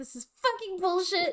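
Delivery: play-acted frustrated venting. Recounting own reaction to an airline's extra baggage charge, reenacting angry frustration. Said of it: "I was so angry and so frustrated".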